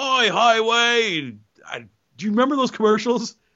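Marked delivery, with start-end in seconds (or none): 0.0-1.4 put-on said in an Australian accent. Recalling a TV character's catchphrase: Jacko impression.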